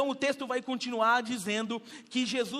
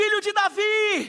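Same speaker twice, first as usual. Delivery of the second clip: shrill, very high-pitched, loud crying-out shout; 9 semitones higher, 7 dB louder than usual. Acting out a woman calling to Jesus: imitating a woman shouting. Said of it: "tem uma mulher gritando".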